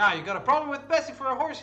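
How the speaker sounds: put-on country farmer accent. Player in a role-play scene, in character, answering another character: put-on character accent. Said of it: "I'm just dying with this accent".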